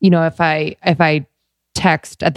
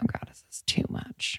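soft, quiet whispered voice. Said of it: "little voice that's like".

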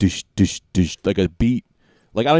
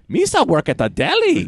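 very high, goofy alien voice; 12 semitones higher than usual. Joking that their character voices drift into Jar Jar Binks, doing a Jar Jar Binks voice. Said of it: "Jar Jar Binks tends to find his way into a lot of your characters".

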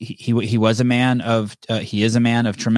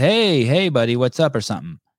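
acted, mock-cool tone, higher pitch; 2 semitones higher than usual. Telling a story, a bodyguard addresses a drunk man grabbing pizza, retelling a cool remark. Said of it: "Travis just coolly says".

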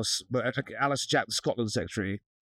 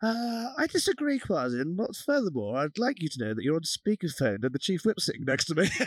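very calm, pitched-up, perfectly composed delivery; 6 semitones higher than usual. Retelling a reply on speakerphone to the minister: imitating Alistair Jack very calmly. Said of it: "just says very calmly".

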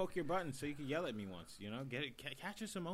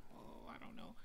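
put-on jittery, flustered, nervous whisper; 9 semitones lower, 11 dB quieter than usual. Imitating someone nervous on a date: imitating nervous Rashawn. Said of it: "all, like, nervous and stuff".

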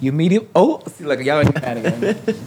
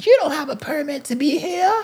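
put-on old-lady voice yelling, very high; 13 semitones higher than usual. Retelling how an old lady from across the street screamed: imitating an old lady screaming. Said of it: "was screaming".

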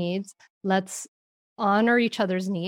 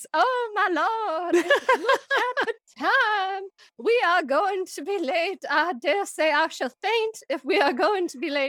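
put-on Southern Belle voice, high, slow drawl; 10 semitones higher than usual. Suggesting a silly voice for hurrying kids out the door, Southern Belle voice. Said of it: "your like Southern Belle voice".

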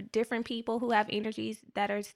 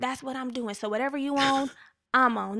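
put-on street-talk voice; 3 semitones higher than usual. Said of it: "That's the voice I read it in".

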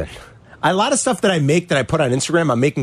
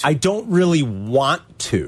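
slow, deliberate spelling-out. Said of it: "I'll say it slowly".

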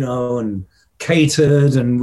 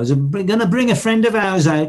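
put-on Birmingham accent, pitched up a bit; 5 semitones higher than usual. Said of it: "that Birmingham accent".

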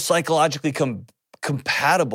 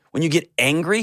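usual speaking voice

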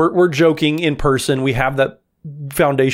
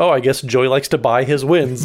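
normal talking voice

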